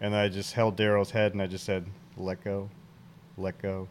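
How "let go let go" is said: very quiet, steady, soothing, calm, soft and slow. Speaker recounts talking someone into letting go of Daryl, retelling a calm voice. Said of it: "Calm voice".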